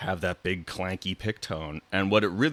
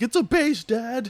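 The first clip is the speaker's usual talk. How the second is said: cranky, mad, pitched way up, drawn out; 5 dB louder than usual. Retelling his reply to his dad's question: imitating himself angry. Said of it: "all mad".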